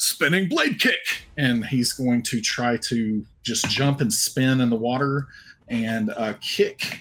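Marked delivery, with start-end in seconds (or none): 0.0-1.3 high, excited, shouted battle cry. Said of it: "jump up and say".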